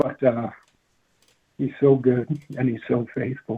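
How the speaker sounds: slightly choked-up, catching voice, holding composure. Speaker recounting a moving memory, choked up. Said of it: "a little choked up at the memory".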